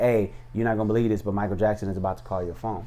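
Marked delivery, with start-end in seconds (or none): none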